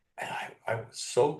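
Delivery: plain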